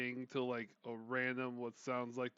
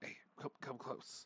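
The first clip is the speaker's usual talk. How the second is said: hushed whisper, quieter; 9 dB quieter than usual. Voicing a character beckoning the party closer: whispering. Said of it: "Is God whispering or the guy whispering?".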